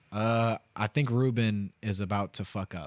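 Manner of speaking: ordinary talk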